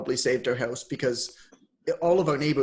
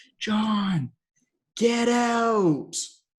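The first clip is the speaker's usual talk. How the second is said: high, anxious, worried yell, long and drawn out; 7 semitones higher than usual. Retelling what Allison yelled from downstairs, imitating Allison's worried yell. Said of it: "this worried tone to Allison's voice".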